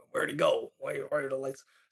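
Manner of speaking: muffled voice through modulator. Recounting a game scene where one of the scientists speaks, muffled voice through modulator. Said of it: "muffled like through a voice modulator".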